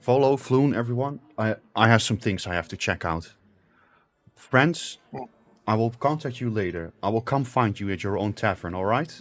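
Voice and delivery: grave, serious, earnest, all-business tone. Narrating a game, speaking Renard's line to the group, in a serious voice. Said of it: "says with a serious voice".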